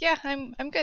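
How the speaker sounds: high, tearful voice, crying through the words. Answering a companion who asks if she is okay, crying. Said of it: "Then why are you crying?".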